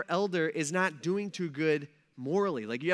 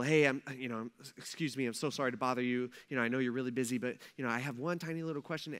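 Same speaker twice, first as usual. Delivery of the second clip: mock timid politeness, lower and quieter; 6 semitones lower, 7 dB quieter than usual. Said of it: "so polite on everything".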